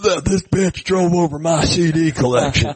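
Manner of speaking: imitated high-pitched yelling. Retelling a man yelling as a crowd of police arrive, retelling a man yelling. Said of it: "And he's yelling".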